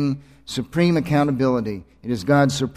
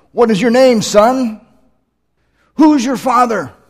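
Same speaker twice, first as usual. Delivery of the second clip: grandiose, booming preacher voice, very loud and high; 10 semitones higher, 8 dB louder than usual. Retelling a preacher calling out to a boy in the aisle, bombastic voice. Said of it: "in a bombastic voice".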